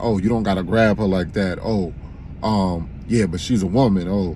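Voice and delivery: ordinary talk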